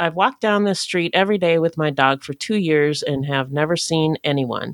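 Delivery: ordinary delivery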